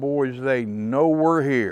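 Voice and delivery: loud, high, top-of-the-lungs screaming. Retelling calling out to the boys under mortar fire: retelling a scream at full volume. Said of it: "I screamed at the top of my lungs".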